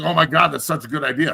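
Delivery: mock heavily ironic, over-impressed sarcastic exclamation. Retelling own reaction to a suggested fix, sarcastic retelling of own reaction. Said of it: "I'm being sarcastic, obviously".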